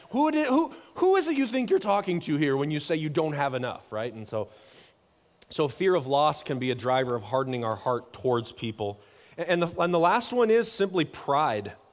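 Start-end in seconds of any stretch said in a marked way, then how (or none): 0.1-3.8 really sarcastic, put-on godlike voice. Speaking as God to people who say they lack enough: put-on sarcastic God voice. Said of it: "I'd be really, like, sarcastic with people".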